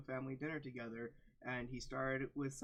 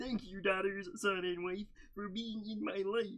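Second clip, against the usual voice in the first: bad put-on frog puppet voice; 6 semitones higher, 5 dB louder than usual. Reading a story aloud, voicing the father character: off-brand Kermit voice. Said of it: "I'm going with off-brand Kermit".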